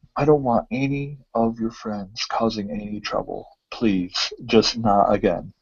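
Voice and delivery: slow, hushed, whispered pleading tone. Voicing a barkeep who warns a player about trouble: whispering. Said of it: "just kinda whispers Thronk and says".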